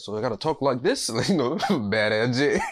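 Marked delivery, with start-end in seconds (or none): none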